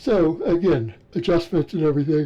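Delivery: words stretched by yawning. Recapping the day's training work, yawning. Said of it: "Sorry, I'm yawning there".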